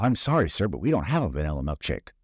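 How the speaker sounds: ordinary talk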